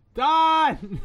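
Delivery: shouting. Acting out a fallen character calling after another: yelling. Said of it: "just yelling".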